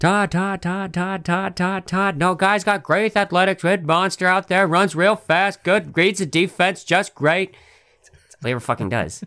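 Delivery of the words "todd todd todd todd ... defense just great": very high, slow sports-analyst voice. Doing an impression of a draft analyst: Mel Kiper impression. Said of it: "everybody can do a fucking Mel Kiper's impersonation".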